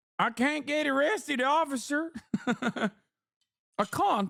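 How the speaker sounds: put-on southern twang, high-pitched. Retelling a woman's words to an officer, imitating her southern twang. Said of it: "hits the southern twang".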